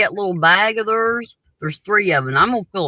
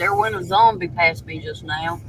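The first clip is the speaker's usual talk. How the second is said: plain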